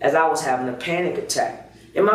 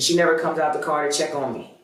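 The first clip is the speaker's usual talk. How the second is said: ordinary talk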